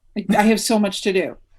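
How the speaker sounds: ordinary talk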